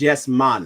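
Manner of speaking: put-on Jamaican accent. Repeating the phrase once more in a jamaican accent. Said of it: "That's my uh, Jamaican uh, accent".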